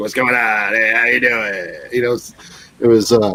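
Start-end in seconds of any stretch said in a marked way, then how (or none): 0.0-1.7 imitated grating radio-host voice. Imitating a radio station guy in new york: imitating a grating radio voice. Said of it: "his voice was so grating".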